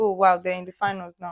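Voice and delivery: ordinary talk, nothing marked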